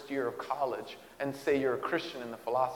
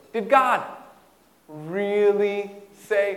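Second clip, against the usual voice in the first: very loud, drawn-out, mocking sarcastic sneer; 6 semitones higher, 9 dB louder than usual. Acting out his question, imitating a mocking, sarcastic question. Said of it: "He comes mocking or sneering or looking at what God had said in a sarcastic way".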